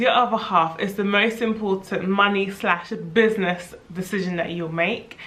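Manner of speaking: ordinary talk, nothing marked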